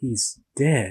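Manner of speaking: put-on, mock very sad delivery. Retelling one of his takes, imitating a really sad take. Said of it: "he just sounded really sad".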